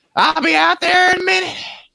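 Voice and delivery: put-on Southern woman's voice. Imitating an aunt calling from the kitchen after dinner: imitating a Southern aunt. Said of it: "they're all like".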